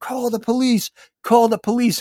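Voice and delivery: acted, very high-pitched repeated yelling. Speaker recounts the road manager yelling at the club's stage manager, retelling a yell. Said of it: "yelling at the stage manager of the club going".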